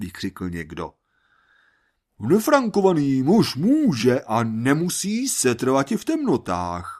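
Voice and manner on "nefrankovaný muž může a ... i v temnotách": pompous, solemn, grandiose, pitched-up declaiming. Reading a story where a man declares something to a crowd: grandiose declaiming voice. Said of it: "prohlásil patetickým hlasem".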